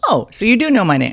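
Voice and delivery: sarcastic, snarky comeback. Retelling own reply to a guy who called her girl: imitating own snarky reply. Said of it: "I'm being snarky".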